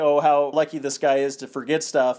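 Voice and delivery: normal talking voice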